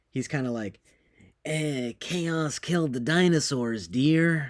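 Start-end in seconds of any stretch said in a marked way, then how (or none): 1.4-4.5 corny, hammy put-on drawl, every word very slowly drawn out. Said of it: "My impression of him".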